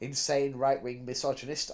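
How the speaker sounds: usual speaking voice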